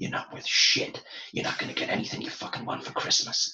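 put-on whispering voice. Retelling a film scene, whispering into a girl's ear: imitating Billy whispering. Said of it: "You do a good Billy impersonation".

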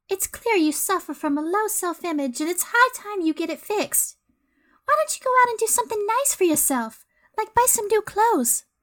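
put-on high-pitched fifties New York accent. Playing Audrey in a two-person scene, in a 1950s New York accent. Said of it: "It's very she's 50s New York accent".

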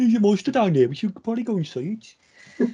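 put-on Dudley accent. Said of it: "stereotypical Dudley than, than Birmingham".

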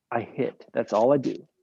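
plain

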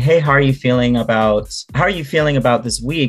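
ordinary talk

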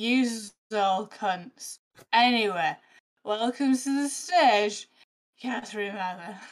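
slow, put-on drunken announcer voice. Speaker retells a drunk man dressed as Father Christmas introducing her: imitating a drunk man. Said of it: "He was so drunk".

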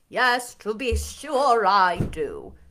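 drawn-out drawl, very slow. Narrator reading Lord Ingram answering a question, drawled. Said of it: "drawled Lord Ingram".

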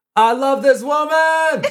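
very high, loud, very slow drawn-out scream. Joking about buying a car for a partner: pretend screaming. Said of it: "I'm gonna scream out".

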